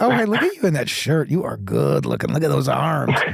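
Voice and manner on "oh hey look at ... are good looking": put-on, playful, flirtatious, admiring delivery. Retelling a bit of acting in love: imitating mock flirting. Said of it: "guys who were in love with each other".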